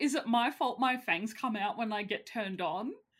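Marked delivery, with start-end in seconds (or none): none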